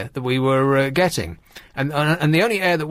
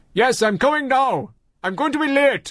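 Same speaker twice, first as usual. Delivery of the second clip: put-on male Nigerian accent, high and yelled; 9 semitones higher than usual. Retelling a man talking on a phone call, in his accent. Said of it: "Stop the accent now".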